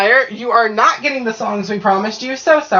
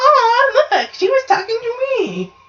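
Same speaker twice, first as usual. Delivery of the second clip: put-on much higher-pitched granny ghost voice. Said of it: "doesn't just go".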